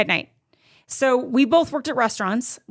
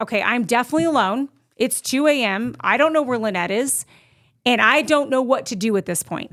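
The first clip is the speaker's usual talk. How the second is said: ordinary talk, nothing marked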